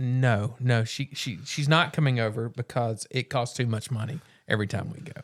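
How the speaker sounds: ordinary delivery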